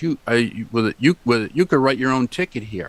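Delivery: ordinary talk, nothing marked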